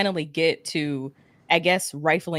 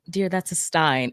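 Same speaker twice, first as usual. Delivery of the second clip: put-on condescending voice. Retelling a reply to a question, imitating Armand, condescending. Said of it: "in the most just like condescending way possible".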